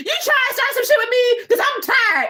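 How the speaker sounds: loud, high-pitched hollering. Retelling how a streamer yelled upstairs after reading a chat comment: imitating Shanny yelling. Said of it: "she dead ass yelled upstairs to Jason".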